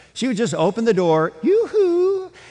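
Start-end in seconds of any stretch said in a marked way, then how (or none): 1.4-2.2 very high-pitched, announcing, calling-out voice. Act out Mrs. Martha Meserly opening the door and announcing herself, in her high-pitched tone. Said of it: "it was in this high-pitched tone".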